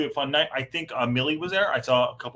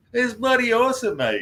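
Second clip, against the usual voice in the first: mock Australian accent, higher and louder; 9 semitones higher, 4 dB louder than usual. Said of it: "my Aussie accent".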